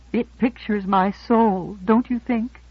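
shy, timid, diffident and bashful. A sculptor speaks shyly about a carved head that looks like her own. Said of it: "dimpling shyly".

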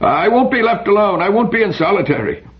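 struggling, shrill, very high scream. Reading Gilbert's line as he struggles against being separated, screaming. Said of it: "Gilbert struggled and screamed".

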